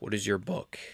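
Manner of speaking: voice cracking. Asking someone what their book is: cracked voice. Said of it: "My voice is cracked".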